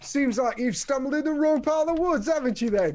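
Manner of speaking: put-on genteel goblin voice with British accent. A game master voices a goblin warning the players, in a British accent. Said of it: "has a British accent. Like, say something".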